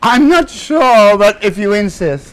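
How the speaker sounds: theatrical, very high, loud, drawn out. Acting out a staged reply to an offer of another drink: theatrical delivery. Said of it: "that was theatrical".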